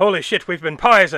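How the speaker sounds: loud, full-on put-on Irish accent. Retelling a film character's line on realizing they were poisoned: full irish accent. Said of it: "fucking full Irish accent".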